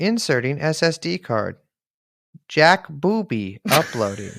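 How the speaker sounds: slow, clunky, badly done robot computer voice. Speaker doing a joke bit, computer voice. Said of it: "That's my computer voice".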